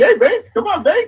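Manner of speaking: very high, relentlessly upbeat, crazy happy voice. Recalling how a coach with crazy nicknames greeted people: Coach Mack high-pitched voice. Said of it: "that was like his his high pitched voice, and it was always upbeat and crazy happy".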